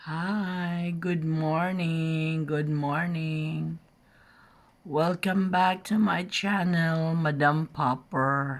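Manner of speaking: just-woke-up bedroom voice. A vlogger greets channel viewers right after waking up, just-woke-up voice. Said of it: "Excuse my bedroom voice".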